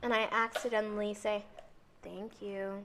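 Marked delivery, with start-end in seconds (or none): 2.0-2.8 mock sassy tone, lower and quieter. Acting out thanking a teacher for a worksheet: imitating a low sassy tone. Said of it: "in a low, like, I'm sassy way".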